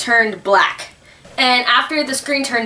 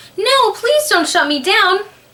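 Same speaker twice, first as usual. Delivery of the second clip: put-on very high, childlike, pleading computer voice; 10 semitones higher than usual. Retelling what the computer said back to mom, in a childish voice. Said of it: "in a childish voice".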